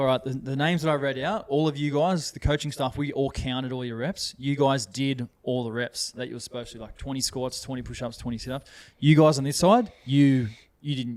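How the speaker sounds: ordinary talk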